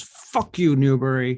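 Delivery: furious, loud, angry storming-off tone. Voicing a character who slams the door on Newbury: angry in character. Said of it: "he just slams the door and walks out".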